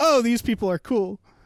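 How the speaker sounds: normal talking voice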